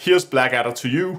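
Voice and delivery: ordinary talk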